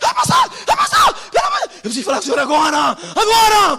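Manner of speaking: shrill, high, swooping, swinging shout. Retelling a church member's frantic plea to the pastor: imitating a woman shouting. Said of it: "vem uma irmã gritando".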